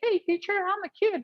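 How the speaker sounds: put-on very high, childlike little-kid voice. Explaining voice changes while growing up, showing how a kid talks; childlike kid voice. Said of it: "as a kid, you may be talking like this".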